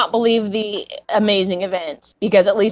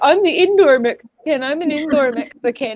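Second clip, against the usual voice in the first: proud, boastful, show-off bragging, pitched up; 6 semitones higher than usual. Retelling how Miguel always brags: imitating Miguel bragging. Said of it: "He always brags".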